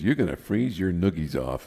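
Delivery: ordinary talk, nothing marked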